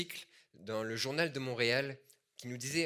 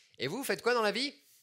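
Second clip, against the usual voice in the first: put-on voice, much higher and very loud; 9 semitones higher, 4 dB louder than usual. At the chiropractor, the speaker mimics the secretary questioning his wife, mimicking a building-wide loud question. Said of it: "Avec un ton de voix où tout l'immeuble avait entendu sa question".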